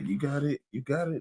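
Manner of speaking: backing-down, placating voice.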